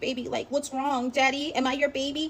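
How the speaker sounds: feigned bashful, shy, coy, sweet put-on voice. Retelling coming downstairs to a man yelling at her door, she is acting shy. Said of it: "I'm all shy and I'm like".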